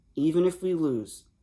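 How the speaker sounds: usual speaking voice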